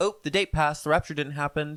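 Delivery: ordinary talk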